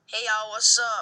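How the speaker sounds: slangy changed voice. Showing how the voice changes at the basketball team: changed slangy voice. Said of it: "change my voice, and I go like".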